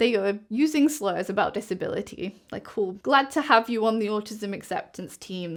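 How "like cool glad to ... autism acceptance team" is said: plain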